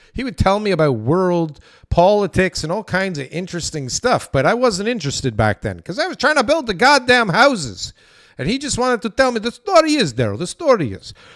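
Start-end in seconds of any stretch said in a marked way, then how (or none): 8.4-11.2 put-on Eastern European accent. Recalling a man who told him history while he built houses, the speaker uses an eastern european accent. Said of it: "let's say he's some kind of Eastern European".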